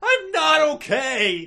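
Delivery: screaming depressedly. Answering a sonic challenge to perform a line, with a depressed scream. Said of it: "he screamed depressedly".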